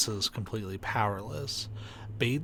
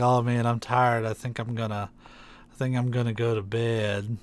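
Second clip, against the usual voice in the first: put-on tired voice, louder; 5 dB louder than usual. Teasing a friend by imitating his earlier words: imitating Paul sounding tired. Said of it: "You're the one that was like".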